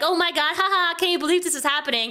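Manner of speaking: mock laughing speech. Retelling someone's reaction to a controversy: imitating someone laughing while talking. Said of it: "laughing in the back, like".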